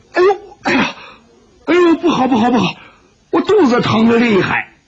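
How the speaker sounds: loud, high, yelping cries of pain. Clutching his stomach and bending over, he gives a loud cry of pain. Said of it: "石破天大声叫道".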